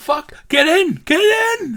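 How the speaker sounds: very high, shrill, loud screeching yell. Urging another character to get in the car during an attack: yelling. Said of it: "I'm just yelling at Vince".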